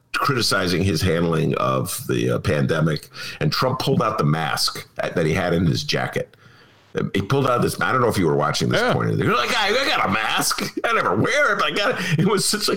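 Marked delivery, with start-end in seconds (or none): 9.5-12.1 play-acted contemptuous sneer, high-pitched. Recounting Trump pulling a mask from his jacket, mock-contemptuous Trump quote. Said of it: "it was just a moment just dripping with contempt".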